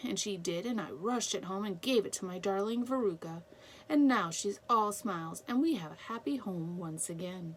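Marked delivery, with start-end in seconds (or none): none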